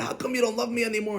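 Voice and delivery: mock high, tearful, crying outburst. Retelling a joke where a wife bursts out at her husband: imitating a wife crying out. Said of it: "And she's crying and crying".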